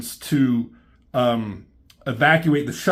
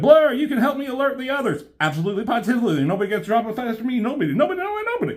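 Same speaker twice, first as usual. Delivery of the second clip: rapid-fire put-on voice, higher pitch; 10 semitones higher than usual. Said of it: "he talks so fast".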